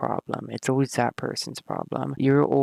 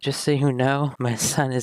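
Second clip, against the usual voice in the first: ordinary talk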